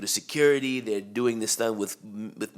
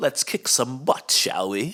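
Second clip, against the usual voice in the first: mock upper-class English accent; 2 semitones higher than usual. Asked which quotes stood out, quoting the butler Cadbury in his posh accent. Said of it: "he had that like posh accent".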